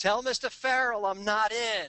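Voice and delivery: high, mock yell, projected, dismissive. Retelling how a man ripped up a business card: imitating someone yelling out. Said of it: "he yells out".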